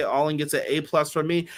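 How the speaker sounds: ordinary talk, nothing marked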